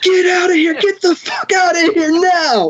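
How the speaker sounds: mock very high, frantic, terrified shriek. Retelling two friends flipping out in the car, imitating their screaming.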